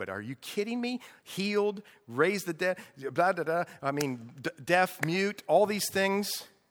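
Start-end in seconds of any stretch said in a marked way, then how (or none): 0.0-1.0 play-acted, soft, sarcastic, wisecracking smart-aleck aside. Voicing a reaction in your own way while retelling a story, mock smart-aleck tone. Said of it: "I'm saying it in my smart aleck way".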